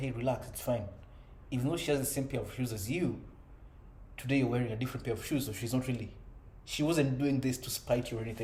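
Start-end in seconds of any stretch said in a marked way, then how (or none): none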